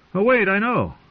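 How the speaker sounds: very high-pitched, shrill shouting. Reading a character answering his own riddle to another: shouted. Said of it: "he shouted".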